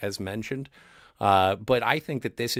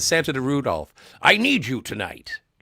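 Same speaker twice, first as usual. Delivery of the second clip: swooping, sing-song character voice, drifting into another character; 4 semitones higher, 4 dB louder than usual. Reading a viewer's comment aloud in a Santa voice. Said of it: "that sounded more like the head elf than it did Santa".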